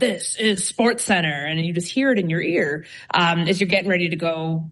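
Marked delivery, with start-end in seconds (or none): 0.0-1.5 put-on big guy voice. Describing hearing the intro before going live: SportsCenter intro big guy voice. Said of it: "it's like big guy voice again".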